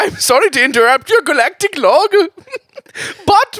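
put-on Scottish accent in very high voice. In an improvised space sketch, a crew member interrupts the captain's log, Scottish accent. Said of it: "is that a Scottish accent?".

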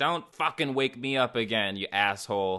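ordinary talk, nothing marked

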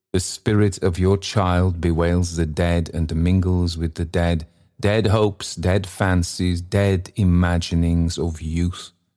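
ordinary delivery

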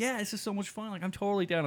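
very high, eager, keen, excited gushing. Retelling how a guest agreed to join the podcast: imitating excited Trevor. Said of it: "he was so, like, excited about it".

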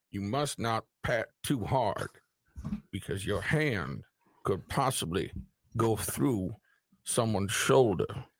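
mock grandstanding senator speech, slow and drawn out. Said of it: "pacing's very good".

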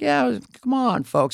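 gentle, soft, very high-pitched delivery. Impersonating Biden speaking gently, Biden impression, gentle. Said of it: "He's like".

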